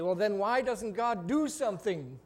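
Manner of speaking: derisive, scornful, mocking, taunting tone. Speaker voices non-believers challenging the speaker, mimicking a mocking challenge. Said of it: "in a mocking tone challenge me".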